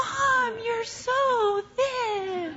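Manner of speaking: play-acted very high, slow, drawn-out scream. Mother retells her daughter screaming to her across the Sunport arrivals, retelling a scream. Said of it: "she screams".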